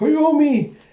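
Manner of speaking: very high, loud cry, called out. Retelling a manga scene where a character cries out a name: imitating someone crying out. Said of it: "you have him crying out".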